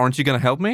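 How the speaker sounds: pointed, grudging, irritated, passive-aggressive tone. Imitating the new version of the line: passive-aggressive James voice. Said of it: "passive-aggressive in a way".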